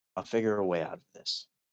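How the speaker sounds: whispering under breath. Voicing a character beside someone fast asleep: whispering under breath. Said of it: "as I whisper under my breath".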